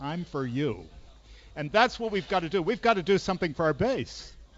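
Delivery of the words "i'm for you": hushed low voice, slower. Retelling what people say when they grab his sleeve: low voice. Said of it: "say in low voices".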